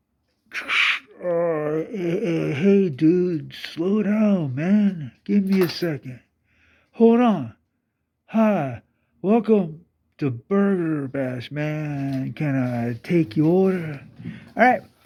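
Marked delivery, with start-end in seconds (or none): 1.2-14.0 dazed service worker voice. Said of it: "you hear the voice go".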